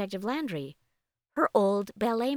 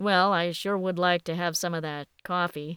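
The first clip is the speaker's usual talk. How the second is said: plain reading voice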